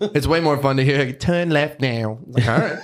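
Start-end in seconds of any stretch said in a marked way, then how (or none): 1.2-2.2 put-on Australian woman's accent. Imitating the phone's directions: imitating Australian Siri voice. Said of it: "our Siri as an Austra-, Australian lady".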